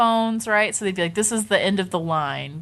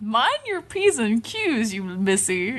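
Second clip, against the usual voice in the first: put-on Texan accent; 3 semitones higher than usual. Retelling what a man told the speaker in the rave line, in a Texan accent. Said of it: "It's like in a Texan accent".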